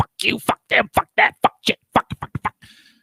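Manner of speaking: play-acted, all-out furious raging temper tantrum. Retelling how a player swore at the speaker, imitating a temper tantrum. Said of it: "this temper tantrum".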